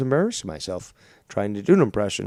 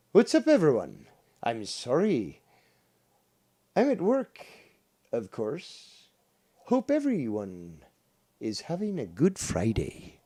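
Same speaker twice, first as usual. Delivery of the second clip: slow, amateurish put-on Irish accent; 3 semitones higher, 4 dB quieter than usual. Speaker tries an Irish impression for everyone listening; attempted Irish accent. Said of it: "I'll try to do an Irish impression".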